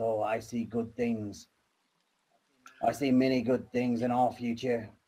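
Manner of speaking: mumbling aloud, muttered half under the breath. A character looking up at the sky among campfires, muttering to himself. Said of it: "he's kind of muttering to himself".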